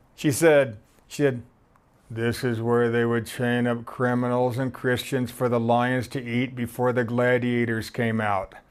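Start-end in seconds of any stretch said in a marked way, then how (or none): 2.1-8.5 low, flat, bored monotone in broken English. Retelling what a woman on her cell phone said, imitating bored monotone broken english. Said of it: "in her bored, monotone, broken English".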